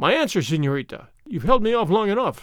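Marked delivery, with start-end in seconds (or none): none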